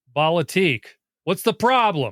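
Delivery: put-on Scottish accent. Greeting an action figure on a shelf: imitating a Scottish accent. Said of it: "that guy with the Scottish accent".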